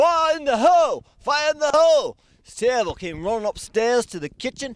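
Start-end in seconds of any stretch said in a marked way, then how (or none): 0.0-2.2 high, loud, alarmed yelling. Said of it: "I heard my dad yelling".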